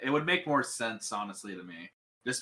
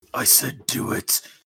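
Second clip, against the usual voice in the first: put-on demon voice, very slow, drawn out, intimidating; 3 dB louder than usual. Insisting that a distracted speaker do as told: put-on demon voice. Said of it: "neither will your demon voice".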